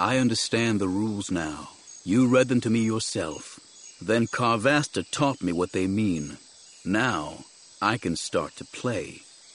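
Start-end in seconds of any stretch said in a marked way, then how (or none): none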